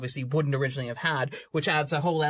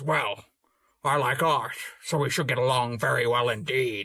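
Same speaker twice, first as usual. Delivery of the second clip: put-on pirate voice. Retelling an anecdote from a documentary about John Huston: John Huston impression. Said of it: "when I do my Huston impression".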